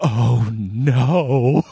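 terrified horror-movie voice, "no" drawn out. Retelling what he said outside the bathroom door, mock-terrified hushed voice. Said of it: "horror movie voice just of him going".

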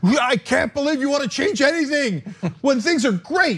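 high-pitched yelling voice. Retelling what the centrists who yell say: imitating a yelling centrist. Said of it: "the centrists who yell at me".

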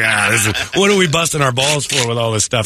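ordinary talk

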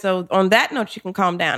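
ordinary delivery

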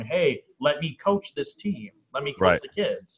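ordinary talk, nothing marked

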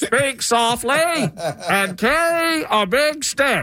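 put-on old-timey radio voice. Repeat the quote so a caller can guess the old-timey president, in an old-timey microphone voice. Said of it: "I'm doing my old-timey".

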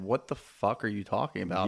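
plain

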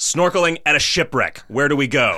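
blunt, loud, high-pitched, demanding voice. Retelling how he walked up to people, imitating a loud demand. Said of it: "walked up to people and demanded".

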